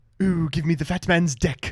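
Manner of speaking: loud cartoon character voice. Doing a Stewie Griffin impression for the viewers: Stewie Griffin voice. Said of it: "That's my Stewie".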